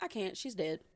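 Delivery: put-on nonchalant, matter-of-fact child voice. Retelling a kindergartner's reply about a dead aunt: imitating a nonchalant child. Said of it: "nonchalant, like, straight, matter of fact".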